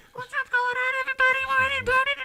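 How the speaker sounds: very nasal, high, rattled-off local voice. Mocking how a local girl talked: super nasally local accent. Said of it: "super nasally".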